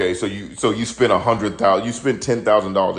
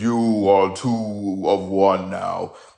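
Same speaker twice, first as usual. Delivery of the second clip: put-on godlike grand proclamation, words drawn out very slowly. Acting out a scene where two people are lifted into light: booming voice. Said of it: "and then a booming voice says".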